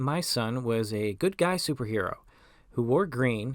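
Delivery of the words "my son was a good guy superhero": plain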